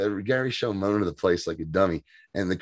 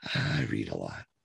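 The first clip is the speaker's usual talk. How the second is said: put-on mutter, much lower and quieter; 12 semitones lower, 10 dB quieter than usual. Describing a new team member, quoting her muttering under her breath. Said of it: "under her breath".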